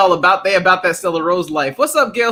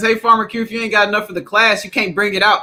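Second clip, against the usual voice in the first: plain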